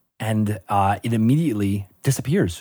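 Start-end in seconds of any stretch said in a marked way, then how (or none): none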